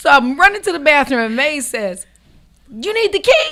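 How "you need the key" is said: maid's voice, squeaky and very high. Retelling being asked if she needed the key: imitating May's voice. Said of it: "in my maid's voice".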